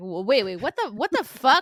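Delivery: mock stunned disbelief. Recalling hearing that someone was shot, the speaker reenacts stunned disbelief. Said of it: "you're going 0 to 400".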